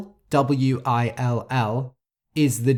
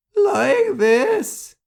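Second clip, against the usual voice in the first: voice suddenly breaking into a very high squeak; 4 dB louder than usual. Explaining a word to learners, demonstrating what a cracking voice sounds like. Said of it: "That's a cracking voice".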